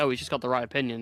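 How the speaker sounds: ordinary delivery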